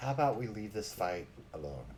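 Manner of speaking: low, hushed, leaning-in half-whisper. Narrating a game scene, voicing Merrick leaning over to a player; Merrick half-whispering. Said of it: "Merrick leans over and whispers to you".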